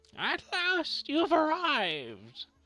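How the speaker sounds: put-on crackling old woman voice, very high. A game master voices a crone at a crystal ball to the players: crackling crone voice. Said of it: "Her voice crackles like dry weeds".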